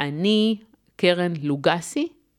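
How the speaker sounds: uptalk, ending lifted on לוגסי. Hebrew uptalk example introducing oneself, rising at the end like a question. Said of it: "שמעתם את הסימן שאלה?".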